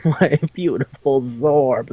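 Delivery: put-on crying voice. Retelling what a character in an episode said: mock crying. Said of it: "he's, like, crying".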